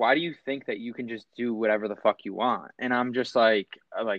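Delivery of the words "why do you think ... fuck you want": plain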